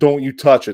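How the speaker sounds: normal talking voice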